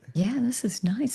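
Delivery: whispering. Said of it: "I'm kind of whispering".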